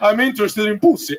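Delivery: creepy, seductive Eastern European vampire voice. Speaker acts out coming up to someone in a bar, in a vampire voice. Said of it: "I sound like a vampire".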